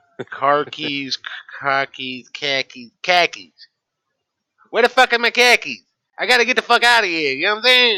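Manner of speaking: very loud, pissed-off, impatient Boston accent. Showing someone how to start the accent off, in a Boston accent. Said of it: "to start the accent off".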